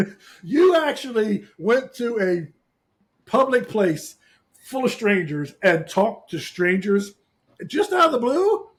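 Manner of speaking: high, loud, sarcastic mock shock. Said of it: "Is that sarcasm?".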